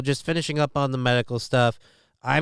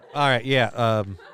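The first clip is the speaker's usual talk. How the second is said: normal talking voice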